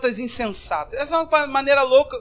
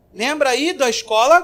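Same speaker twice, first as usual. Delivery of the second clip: plain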